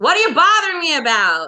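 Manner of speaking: loud, high-pitched shout. Voicing Hook speaking loudly to a crew member, first try: loud Hook voice, wrong accent. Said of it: "You hear Hook say something loudly".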